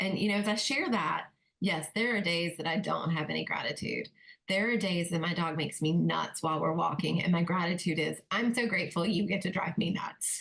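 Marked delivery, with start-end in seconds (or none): 8.3-10.4 mock sarcastic tone. Retelling what is said to the dog on a walk: retelling a sarcastic thank-you. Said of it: "There's a little sarcasm in those".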